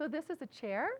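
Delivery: pitch rises on the word chair. Demonstrating a questioning tone using the same words: rising pitch on chair. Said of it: "just putting a question mark at the end of it with my tonality".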